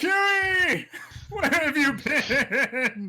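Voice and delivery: excited yell, loud, high and very slow. Calling out to a long-lost friend in character: loud excited shout. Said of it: "he seems a little taken aback with how loud you say that".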